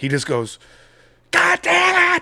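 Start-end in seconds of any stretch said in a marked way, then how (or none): 1.3-2.2 play-acted all-out screech, very high and shrill. Describing a film scene where the character learns his memories are real, retelling a top-of-lungs scream. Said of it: "he just screams at the top of his lungs".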